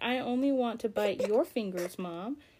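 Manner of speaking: mock grumpy teething baby voice. Voicing the teething baby's thoughts while holding him: voicing a grumpy teething baby. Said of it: "He's like".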